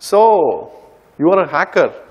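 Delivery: very sarcastic, accusing tone with swooping pitch. Retelling how police officers open a conversation with them, mocking their sarcastic tone. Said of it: "this is in a very sarcastic tone".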